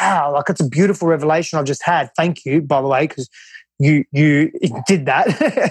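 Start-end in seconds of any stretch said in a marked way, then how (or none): none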